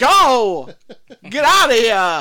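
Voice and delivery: terrible, very loud, swooping, slow put-on drawl. Retelling a movie character's line: imitating Chip's terrible Christopher Walken impression. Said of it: "he's trying to do a terrible Christopher Walken impression".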